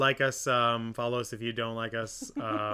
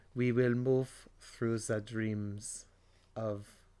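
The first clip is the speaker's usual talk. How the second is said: pretentious put-on director voice, quieter; 5 dB quieter than usual. Mocking how a director speaks, pretentious Werner Herzog voice. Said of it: "he speaks so pretentiously".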